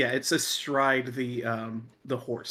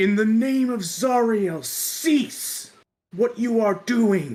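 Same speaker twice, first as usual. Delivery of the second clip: very high, thundering, booming commanding shout; 10 semitones higher, 7 dB louder than usual. Narrating a game, voicing a figure astride a burning horse, booming voice. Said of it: "you hear a booming voice".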